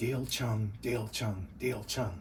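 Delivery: secretive, soft, hushed half-whisper. Retelling half-whispering a name to a hero at a party: retelling own half-whisper. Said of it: "I whispered to Quincy".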